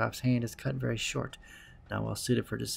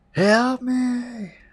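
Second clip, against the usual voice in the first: very high, very loud, shrill full-lung scream; 13 semitones higher, 10 dB louder than usual. Reading a scene aloud, the narrator draws a huge breath; screaming for help. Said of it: "I scream".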